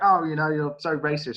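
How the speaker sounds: ordinary talk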